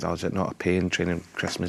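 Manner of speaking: ordinary delivery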